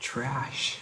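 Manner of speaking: the word "trash" said high up. Vocal exercise, told to say the word a little higher, even higher pitch. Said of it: "A little higher".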